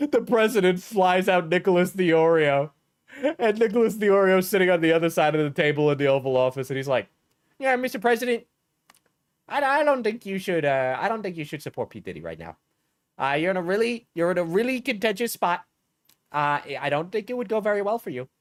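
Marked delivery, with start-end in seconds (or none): 7.6-18.2 put-on cartoon teen voice, higher pitch. Imagining a man advising the president in the Oval Office: Chris Griffin voice. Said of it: "him sounding like Chris Griffin".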